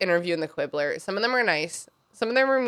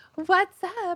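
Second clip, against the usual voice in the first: very high, horrifying villain voice; 11 semitones higher than usual. Retelling how Dolores Umbridge comes over in the books, do a horrifying Dolores Umbridge voice. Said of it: "in like her horrifying voice".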